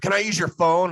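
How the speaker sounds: acted-out shrill aggressive shout, very high and very loud. Retelling a stranger asking to use the phone: imitating an aggressive stranger. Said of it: "all aggressive".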